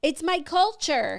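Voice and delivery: high-pitched shout called back loudly. Retelling an audience member's reply from the front row: imitating someone shouting back. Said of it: "the girl shouts back".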